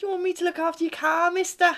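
very bad Liverpool accent, very high pitch. After calling another speaker's attempt the worst, trying a put-on Liverpool accent. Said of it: "worst Liverpoolian accent".

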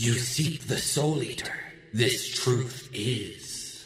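monster creature voice. Voicing a creature that speaks to the players: creature voice. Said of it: "you hear one of these creatures say".

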